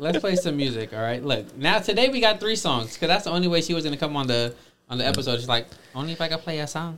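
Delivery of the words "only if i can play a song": soft, badly done put-on Guatemalan accent. A host quotes a guest on the episode; bad Guatemalan accent. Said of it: "My bad Guatemalan accent".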